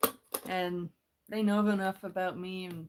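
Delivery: plain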